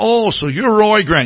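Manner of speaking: put-on drawling Texan accent. Retelling what a big guy said on meeting him: Texas drawl. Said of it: "he's got this Texas drawl".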